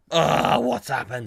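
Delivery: high, raspy, croaky little street rat voice. Retelling what was heard over a disconnected phone: little street rat voice. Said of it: "this little street rat voice going".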